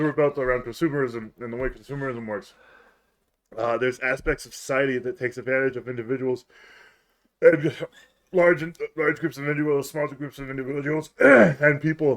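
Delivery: rushed, rattled-off speed-reading delivery like teleprompter copy. Speaker talking quickly because every breath hurts, rushed speed reading. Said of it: "You sound like you're speed reading off a teleprompter".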